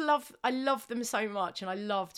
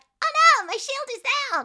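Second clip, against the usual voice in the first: grunting cartoon New York accent, much higher, louder; 10 dB louder than usual. Acting out what an enemy grunt says after being shot, cartoony New York Grunt accent. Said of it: "funny little cartoony New York accents".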